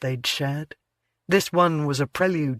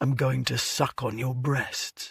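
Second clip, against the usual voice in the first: low, hushed growl, close; 2 semitones lower, 5 dB quieter than usual. A narrator reads his line to her as he nuzzles her, low growl. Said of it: "He growled low".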